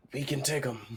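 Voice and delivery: whispering. In a role-playing game, whispering into another character's ear. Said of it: "I whispered into his ears".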